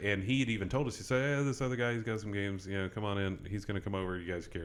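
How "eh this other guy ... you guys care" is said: plain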